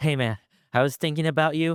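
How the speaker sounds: put-on out-of-breath voice, as if running. Retelling a friend's voice message sent mid-run: imitating someone talking while running. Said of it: "someone that's running".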